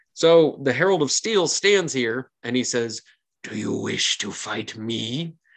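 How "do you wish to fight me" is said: put-on slow, drawn-out, raspy, wheezing voice. Game narrator voices the Herald of Steel challenging someone, in the Herald of Steel's wheezing voice. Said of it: "his voice sort of wheezes out from his lungs and out of his teeth".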